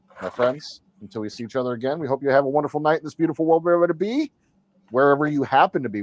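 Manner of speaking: fast, hurried, rattled-off delivery with run-together words. Signing off to viewers after five hours of building models: said really fast. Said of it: "I said that really fast".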